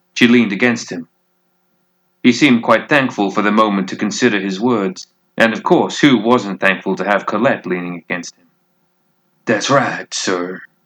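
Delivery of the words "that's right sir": rough, gruff delivery. Reading a story aloud, a character answers in a gruff voice. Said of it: "his gruff voice said".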